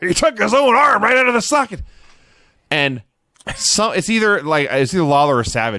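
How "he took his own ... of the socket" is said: very high screaming commentary. Retelling a wrestling commentator's screamed call: Vince McMahon voice. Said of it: "he's doing it in the Vince voice".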